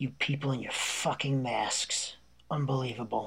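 mumbling under breath. Retelling a stranger's remark passing his wife at a rest stop: imitating someone mumbling under breath. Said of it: "he mumbles under his breath".

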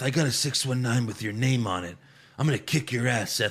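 hushed half-whisper throughout. Recapping a promo where Rey Mysterio threatens Seth, imitating Rey Mysterio half-whispering. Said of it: "He's like whispering".

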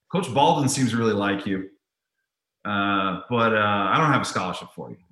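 normal talking voice

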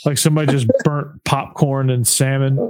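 plain

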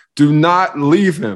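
play-acted high screaming. Retelling what an assistant coach shouted during the game: retelling a coach screaming. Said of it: "he is screaming".

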